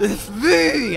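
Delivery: put-on Transylvanian village accent in a vampire voice. Joking about a Transylvanian village, the vampire answers, Transylvanian accent as vampire. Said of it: "you have the same voice".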